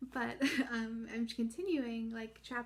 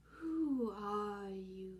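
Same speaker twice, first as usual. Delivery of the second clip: drowsy, unhurried, languid, sleepy drawl. Reading a story, the Caterpillar speaks first after a silence, languid, sleepy Caterpillar voice. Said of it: "addressed her in a languid, sleepy voice".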